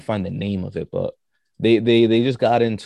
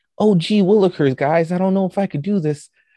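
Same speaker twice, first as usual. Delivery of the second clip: put-on very high, naive, innocent little-kid voice; 10 semitones higher, 4 dB louder than usual. Describing a guy who copies others, imitating an innocent little kid. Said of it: "he talks with the innocence of like a little kid".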